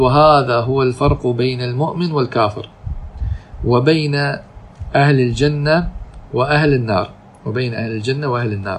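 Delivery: plain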